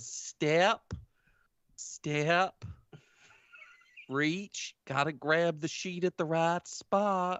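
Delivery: slow, stiff, mechanical robotic delivery. Playing a character turning stiffly under watch: slow and robotic. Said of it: "She very slowly and robotically turns and she says".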